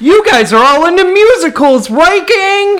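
pushed, over-eager forced enthusiasm, very high pitch. Asked to redo a line with less disdain, with more effort. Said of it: "With a little bit more fucking effort".

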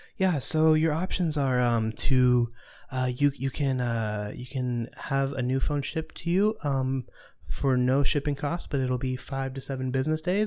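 mock very calm, soothing tone. Retelling what a tech support agent said: imitating a very calm, soothing agent. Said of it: "very calm and soothing".

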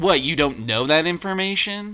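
mock smug, know-it-all delivery. Retelling how a movie character says a line, imitating a know-it-all tone. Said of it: "she's so goody. Like, I have all this knowledge".

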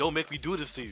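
put-on, abusive-sounding voice. Retelling how a fighter spoke before a fight: Gohan sounding like abusive husband. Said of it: "Gohan started sounding like an abusive husband".

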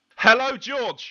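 powerful, booming, very loud, very high-pitched. Co-host greeting the host on the show's first episode, loud greeting. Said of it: "Why you got to be so loud?".

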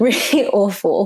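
words broken up by laughter throughout. Apologizing mid-sentence for nearly swearing, laughing while talking. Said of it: "Now I'm laughing".

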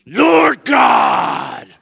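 very loud, rough, full-throated yelling. Acting out a person praying harder: imitating someone yelling a prayer. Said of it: "Why are you yelling?".

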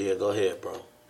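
normal talking voice

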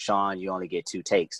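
normal talking voice

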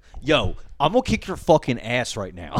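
put-on Philadelphia sports fan voice with swooping pitch. Imitating a philly fan refusing to take off his jersey: imitating a philly fan. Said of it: "I love Philly people".

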